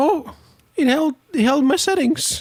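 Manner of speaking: voice cracking up high. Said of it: "my voice is cracking a little bit today".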